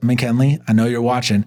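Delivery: plain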